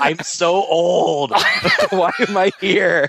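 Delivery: mock suddenly overcome with emotion, high-pitched. Mocking a commander in a film who suddenly gets super emotional. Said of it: "Suddenly getting super emotional".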